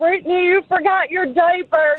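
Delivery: put-on very high voice, words slurred together. Retelling how he secretly followed them around the mall, imitating a slurred voice. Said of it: "in a slurred voice".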